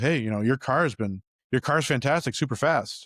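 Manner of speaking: ordinary talk, nothing marked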